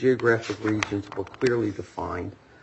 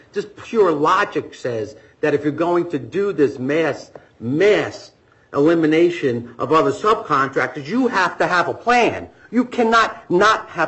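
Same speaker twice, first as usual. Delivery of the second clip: animated, loud, deliberate raised voice; 6 semitones higher, 5 dB louder than usual. Arguing a point before the judge, in a raised voice. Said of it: "I raised my voice".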